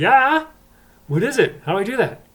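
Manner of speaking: high, loud, eager and excited.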